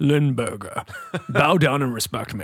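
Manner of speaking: haughty, snobbish, snooty banker voice. Joking about limburger cheese, voicing it as a snooty banker voice. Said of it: "Sounds like a snooty a banker".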